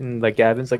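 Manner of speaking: ordinary delivery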